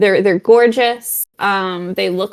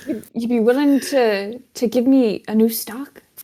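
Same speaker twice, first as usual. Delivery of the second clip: put-on old man voice; 3 semitones higher than usual. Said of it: "he sounds old, too".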